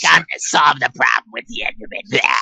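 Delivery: put-on raspy heavy-smoker witch voice. Joking about how the series' witch could sound: put-on witch voice of a heavy smoker. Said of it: "You could have done the, the voice".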